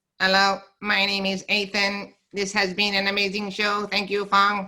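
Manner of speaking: flat, high-pitched robotic machine voice. Speaker shows the voices he can do: robot voice. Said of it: "I can do a robot".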